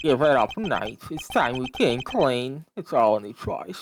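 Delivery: put-on voice with puffed, stuffed cheeks. Voice actor pinches his cheek open to voice his character: voice with stuffed cheeks. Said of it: "put cotton balls in my cheeks when I voice him like this".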